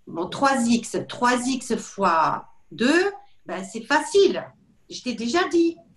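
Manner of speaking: very drawn-out, slow, swooping, exasperated and irritated. Acting out a mother checking her child's math exercise: irritated, losing patience. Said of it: "je sens que je suis énervée".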